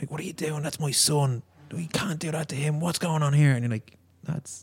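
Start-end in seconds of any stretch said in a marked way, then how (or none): 0.1-3.5 angry, high-pitched roaring outburst. Retelling a father running onto the pitch at a kid; imitating a man roaring. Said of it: "just started roaring at the kid".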